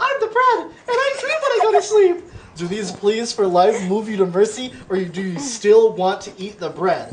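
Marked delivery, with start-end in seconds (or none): 0.0-2.2 very high put-on girl voice. Playing a loaf of bread pleading not to be eaten, in a girl voice. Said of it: "Want me to do a girl voice?".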